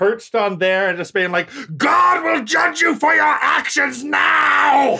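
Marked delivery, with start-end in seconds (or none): 1.8-4.9 put-on, very high, rough, top-of-the-lungs bellow. Imagining an Inquisitor condemning someone: imitating Jeremy Irons yelling. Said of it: "just yelling at the top of his lungs".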